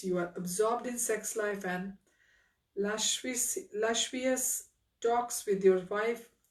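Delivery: ordinary delivery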